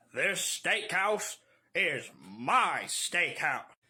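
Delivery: mechanical, robotic cowboy western voice. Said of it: "he just sounds like a robotic cowboy".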